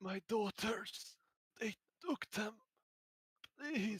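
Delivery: very high, raspy gasping voice, pleading. A game master voices an impaled, dying man calling out to the players, raspy gasping voice. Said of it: "between grasps of air and a raspy voice".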